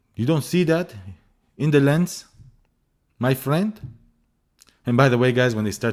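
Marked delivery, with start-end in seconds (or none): 0.2-3.8 put-on, pitched-up shopkeeper accent. Retelling what a shopkeeper said while inspecting a lens: imitating a shopkeeper's accent.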